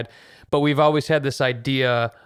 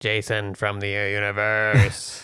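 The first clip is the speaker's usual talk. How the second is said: eerie, creepy voice, lower; 4 semitones lower than usual. Introducing oneself on a podcast after a sci-fi-style opener: creepy voice. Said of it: "That was that was really creepy".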